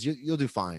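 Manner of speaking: play-acted grave, earnest, heart-to-heart delivery. Retelling a comedian's words in a heart-to-heart talk, imitating Chris Buck getting real serious. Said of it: "gets real serious and he looks at me".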